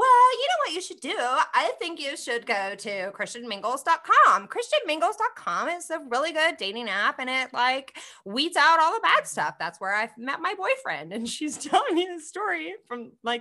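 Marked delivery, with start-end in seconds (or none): 0.0-11.1 put-on loud, swooping, full-on valley girl speech. Retelling a woman's dating app advice, in a valley girl voice. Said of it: "the girl's the Valley girl".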